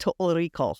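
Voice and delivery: attempted Scottish accent, laid on thick. Showing the one phrase used to get into a Scottish accent: Scottish accent. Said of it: "if I have to speak in a Scottish accent".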